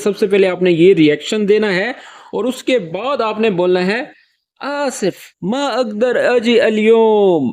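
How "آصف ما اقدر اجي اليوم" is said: embarrassed, sheepish, very slow and drawn out. Teaching how to apologize on the phone in Arabic, soft embarrassed apology. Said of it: "یہ شرمندگی کے انداز میں یا دھیرے لہجے میں فون پر کس طرح سے معذرت کریں گے؟".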